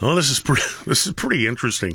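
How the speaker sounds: speaking through laughter, chuckling. Talking about politicians, the speaker reacts while laughing. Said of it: "Sorry I'm laughing".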